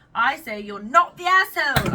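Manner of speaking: very loud, high, fake British accent. Delivering a verdict on someone's story, in a put-on British accent. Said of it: "I'm always British when I do that".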